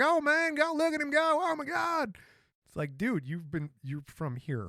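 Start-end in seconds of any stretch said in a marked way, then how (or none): 0.0-2.2 put-on very high, slow, loud Southern drawl. Someone born in Michigan mimics people across the street watching NASCAR: imitating a Southern American accent. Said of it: "hear people across the street with Southern accents".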